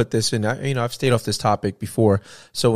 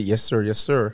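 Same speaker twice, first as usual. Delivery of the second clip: put-on polite voice, slower. Describing getting pulled over and putting on a best voice, imitating polite 'yes sir' voice. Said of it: "I got to speak my best voice".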